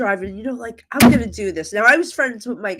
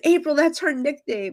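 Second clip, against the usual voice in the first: put-on tearful, weeping cry through tears; 5 semitones higher than usual. Retelling what a crying woman said during a reading: imitating a crying woman. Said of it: "She's crying, she goes".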